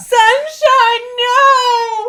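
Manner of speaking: high, loud, grieving sobbing wail. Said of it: "Are you crying?".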